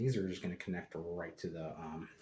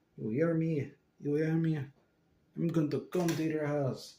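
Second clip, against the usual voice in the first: big, loud, high-pitched vampire voice; 9 semitones higher, 9 dB louder than usual. Speaker plays a vampire character, in the Count vampire voice. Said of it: "I'm a vampire".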